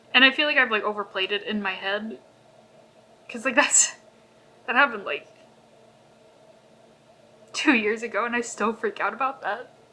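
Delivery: tearful, crying. Recalling a two-year-old fear of having upset someone, crying. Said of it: "I don't know why I'm crying".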